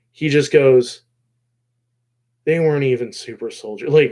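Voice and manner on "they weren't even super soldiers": put-on crushed, shell-shocked, stunned, defeated disbelief. Retelling his line at the end of a fight: imitating a defeated, shocked voice. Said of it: "in such a defeated, like, shocked voice".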